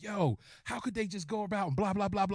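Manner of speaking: heated, worked-up outburst. Retelling a friend's heated reaction to a movie: imitating a worked-up friend. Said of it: "super hype about it".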